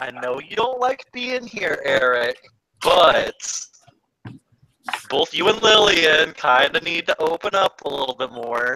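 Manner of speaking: slow, patronizing, condescending coaxing tone. Voicing a character who claps and tells others to open up: condescending tone. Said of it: "that condescending tone out of your voice".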